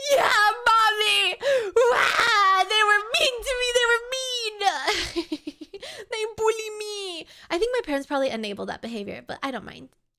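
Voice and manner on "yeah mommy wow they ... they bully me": high, drawn-out, teary sobbing voice. Retelling telling mommy about being bullied, imitating own crying. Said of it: "I call my parents and I cry".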